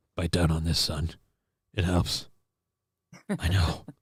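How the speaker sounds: odd half-whisper, very low, quiet and hushed. Quoting a movie character's line, in a weird half-whispered drill sergeant voice. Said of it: "the weird like half whispered".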